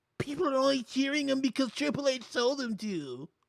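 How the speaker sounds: put-on nerd voice, shrill and very high. Quoting what a man said online, in a put-on nerd voice. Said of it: "Let me put my nerd voice on".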